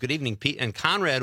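ordinary talk

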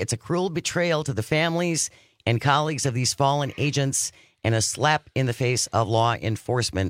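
plain

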